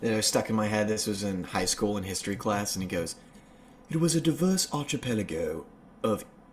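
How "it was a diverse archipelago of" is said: put-on British documentary narrator voice. Recalling a documentary narrator from high school history class, British documentary voice. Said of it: "a British documentary voice".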